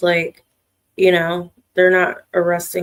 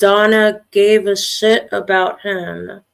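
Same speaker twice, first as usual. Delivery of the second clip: plain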